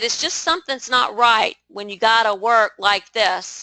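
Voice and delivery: ordinary talk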